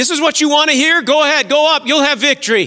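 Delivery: sneering sarcastic mockery. Speaker acts out a prophet mocking the other prophets, retelling sarcastic mockery. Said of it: "He was speaking sarcastically".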